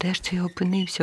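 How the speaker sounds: usual speaking voice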